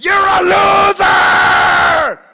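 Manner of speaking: screeching, very high, very loud shrill yell. Retelling how a golf partner yells at the ball: imitating a friend yelling at a golf ball. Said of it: "I've seen him go up to the ball and go".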